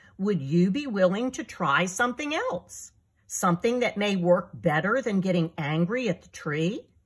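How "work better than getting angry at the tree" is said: ordinary delivery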